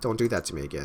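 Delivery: ordinary delivery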